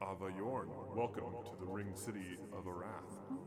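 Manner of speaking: very soft, strange, hollow, echoey voice. Narrating a scene, the speaker voices a hooded figure approaching you: weird echoey voice. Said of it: "in a weird, echoey voice".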